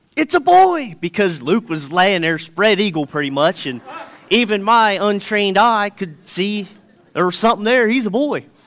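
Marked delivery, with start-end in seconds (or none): 0.2-1.0 very high, loud, shouted-out blurt. Retelling seeing the ultrasound and calling out: retelling own shout. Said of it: "And I shouted out".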